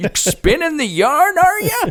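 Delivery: put-on high, swooping old man voice. Retelling how Brad interrupts a bedtime story: imitating Brad sounding like an old man. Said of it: "he sounds like an old man".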